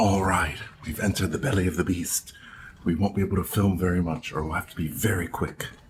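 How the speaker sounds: hushed, whispered voice. Vlogging on a ship after entering the art gallery, whispering. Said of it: "Why are you whispering?".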